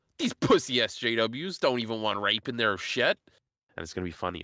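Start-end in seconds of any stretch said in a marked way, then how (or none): none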